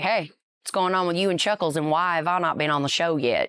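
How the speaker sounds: imitated heavy Southern accent. Retelling what a friend said at the bar: imitating thick southern accent. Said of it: "he's got that thick Southern accent".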